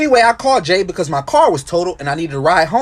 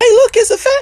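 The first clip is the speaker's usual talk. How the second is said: put-on very high, babyish little voice; 4 dB louder than usual. Retelling what a voice said, overheard while walking down the street, in a baby voice. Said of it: "this baby voice say".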